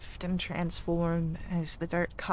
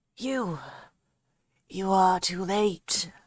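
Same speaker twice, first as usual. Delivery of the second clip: loud, scratchy, aged voice like scraped stone; 5 dB louder than usual. A narrator voices an unseen figure calling out across the fields: scratchy old voice. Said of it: "an old voice calls out, scratched as if it has been dragged over coarse stone".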